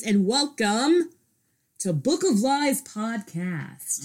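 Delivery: on-air radio announcer presenter voice. Podcast host welcoming listeners to the show, radio voice. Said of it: "That was my radio voice".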